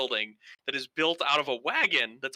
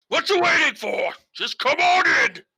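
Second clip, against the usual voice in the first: gruff character voice, loud and very high; 11 semitones higher, 7 dB louder than usual. Voicing a gruff shifter calling a knocking player inside: gruff sounding voice. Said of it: "a really kinda gruff sounding voice".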